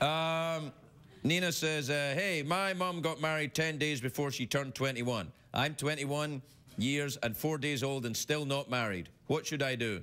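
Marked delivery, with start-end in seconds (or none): none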